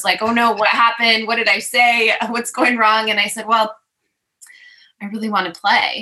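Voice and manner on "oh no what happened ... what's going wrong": nervous, fretting, worried manner. Retelling a meeting where the other person reacted, acting out getting all nervous. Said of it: "he got all nervous".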